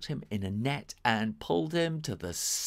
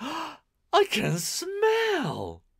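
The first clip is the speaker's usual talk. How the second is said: very high, gleeful, swooping joyful laugh; 14 semitones higher, 3 dB louder than usual. Narrator reading a story, voicing Only One as he laughs: Only One, laughing with joy. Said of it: "The young muss ran at the Robocat. / thought [name]. / The door closed behind the young muss".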